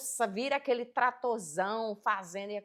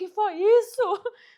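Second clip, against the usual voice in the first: shrill, very high, booming, drawn-out, full-volume shout; 11 semitones higher, 12 dB louder than usual. Retelling how the daughter yelled from upstairs: imitating a daughter shouting. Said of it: "minha filha gritou lá de cima".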